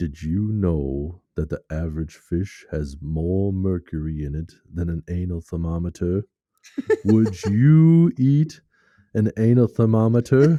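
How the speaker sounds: deep, low, loud big fish voice. Retelling a scene where a big fish talks to another fish, low big fish voice. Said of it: "he's got a low voice".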